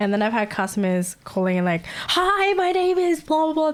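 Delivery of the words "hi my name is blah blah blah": mock scream, very high-pitched and drawn out. Retelling how some calling customers start: imitating a caller screaming. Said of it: "They start screaming".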